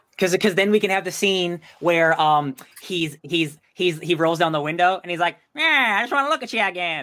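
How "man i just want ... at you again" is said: put-on thirties New York gangster accent, pitched up. Acting out a scene where a character rolls down a window: put-on thirties New Yorker voice. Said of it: "I don't know why he turned into that voice".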